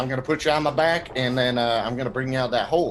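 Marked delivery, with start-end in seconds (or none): none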